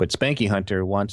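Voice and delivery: normal talking voice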